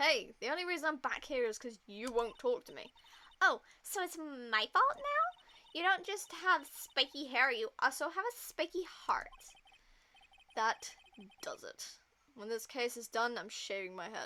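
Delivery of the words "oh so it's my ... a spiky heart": put-on female voice, pitched up and loud. Reading case dialogue aloud, voicing Miss April May's reply: April May voice. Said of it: "I'll do the voice for Miss April May".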